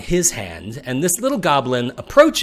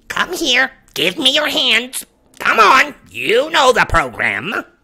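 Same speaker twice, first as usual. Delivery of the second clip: shrill, very high, loud goblin voice; 12 semitones higher, 5 dB louder than usual. Voicing a goblin in a told story, goblin voice. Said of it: "this goblin says".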